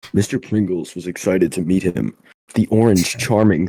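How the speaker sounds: storybook reading-aloud narrator voice. Telling a made-up story about a chip to another speaker, in narrator voice. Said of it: "let me get my narrator voice".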